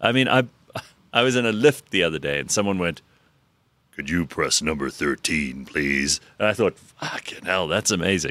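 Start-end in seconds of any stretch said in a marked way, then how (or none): 3.9-6.2 deep announcer voice like on the radio. Retelling someone in a lift, imitating a deep radio voice. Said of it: "There are people like that".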